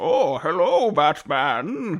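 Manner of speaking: put-on comic-book villain voice with heavy German accent. Clarifying which voice was meant, then doing a Bane impression. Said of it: "that's pretty good".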